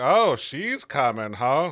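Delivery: very loud, slow, deliberate, repeated words. Voicing a character who repeats what others said: saying it very loud. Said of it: "repeating what they're saying very loud".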